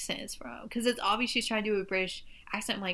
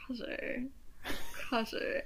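ambiguous British-American accent, mock smirking girl voice; 3 semitones higher, 4 dB quieter than usual. Retelling how a girl of unclear origin said a word, imitating a smirking girl. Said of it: "she has this like smirk".

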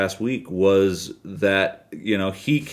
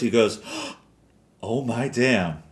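slow, gasping, stunned disbelief. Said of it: "you literally hear in his voice".

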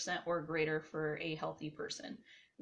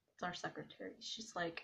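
normal talking voice

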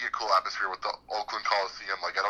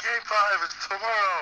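mock very high, full-energy broadcast yell; 11 semitones higher, 3 dB louder than usual. Retelling a favorite announcer's call: imitating Don Orsillo yelling. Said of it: "he's, like, yelling. He's like".

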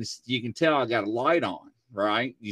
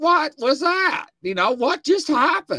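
put-on UK accent, pitched very high; 6 dB louder than usual. Retelling what Michael asked when the doll got yanked: imitating Michael's UK accent. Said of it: "in his U K accent".

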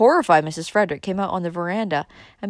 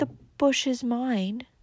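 soft, slow mutter to oneself; 5 semitones higher, 6 dB quieter than usual. Valancy, being scolded about the bush, answers her critic: muttered. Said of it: "muttered Valancy".

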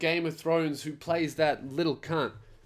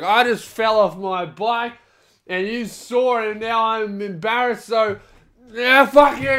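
put-on belligerent, very loud, high drunken bellow; 7 semitones higher, 10 dB louder than usual. Speaker retells a drunk cyclist punching a stranger, imitating a drunk man yelling. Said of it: "he's yelling at them".

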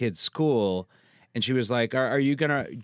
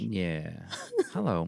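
subdued, quiet radio-host voice; 6 semitones lower, 6 dB quieter than usual. Greeting the hosts at the start of the show: subdued NPR voice. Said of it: "You're so subdued now".

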